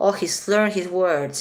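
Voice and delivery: ordinary talk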